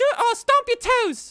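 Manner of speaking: put-on very high, loud little girl voice. Voicing a masked little girl making a demand of the players: little girl voice. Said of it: "the voice comes out again and says".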